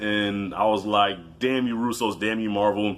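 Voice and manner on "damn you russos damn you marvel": ordinary talk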